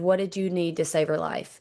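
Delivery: ordinary talk, nothing marked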